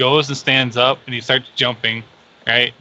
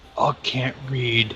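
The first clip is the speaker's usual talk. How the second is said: hushed theatrical stage whisper meant to carry; 7 dB quieter than usual. Narrating a tabletop game, voicing a character's reply to a player: stage whisper. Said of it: "In a stage whisper".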